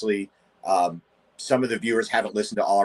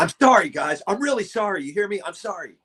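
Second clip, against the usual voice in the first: put-on shouting, higher pitch; 10 semitones higher than usual. Imitating a very loud public apology: imitating a loud angry apology. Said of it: "Loudest apology ever".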